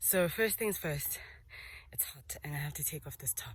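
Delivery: winded, panting, breathing hard while talking. Filming at the start of a hot hilltop hike, panting, out of breath. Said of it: "I'm already panting".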